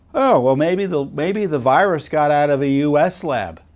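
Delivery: half-sarcastic, mock musing tone.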